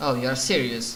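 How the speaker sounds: dry, flat and expressionless deadpan. Voicing a character in a game scene who looks up after a pause: deadpan. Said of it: "gives you this deadpan look".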